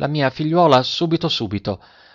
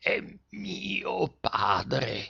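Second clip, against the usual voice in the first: strange, coarse, thick, out-of-tune voice, very hushed; 3 semitones higher, 13 dB quieter than usual. A girl answers the gardener in a thick, strange, off-key voice. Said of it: "con una voce grossa, strana, stuonata".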